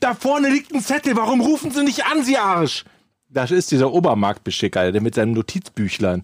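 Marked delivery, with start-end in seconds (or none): 1.2-2.8 mock very high, shrill, screeching yell. Speaker recounting a dispute over a towed car, retelling her own yell. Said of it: "Warum schreien Sie denn so?".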